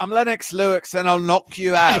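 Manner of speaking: put-on British accent. Joking between answers, Lennox Lewis British accent. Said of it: "British accent".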